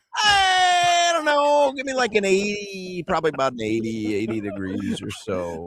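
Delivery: mock very slow, hazy, offhand, high and swooping. Imitating how a co-host guessed the temperature: imitating a vague weather guess. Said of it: "the way he said it was like".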